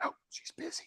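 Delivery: put-on very quiet, hushed little-boy whisper. Telling a story where a little boy answers a realtor's call, whispering. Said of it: "and he's whispering".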